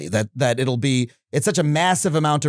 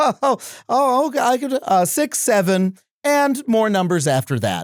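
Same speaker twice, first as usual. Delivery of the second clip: chipper, bright, cheery, pitched-up assistant voice; 9 semitones higher than usual. Retelling a video where a chatbot is asked to count: cheery ChatGPT voice. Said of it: "it has this cheery note in its voice".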